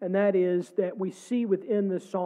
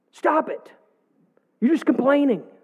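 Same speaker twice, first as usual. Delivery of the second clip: mock exaggerated scolding, raised voice, high and dramatic; 6 semitones higher, 5 dB louder than usual. Retelling what his wife said, exaggerating it with a dramatized raised voice. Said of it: "I wanted to be dramatic".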